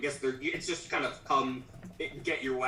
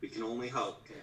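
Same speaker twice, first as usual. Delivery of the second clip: dropped, hushed voice with the same timbre; 3 semitones lower, 6 dB quieter than usual. A game master voices a character answering the two visitors in a lowered voice. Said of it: "kind of lowers her voice in similar timbre and says".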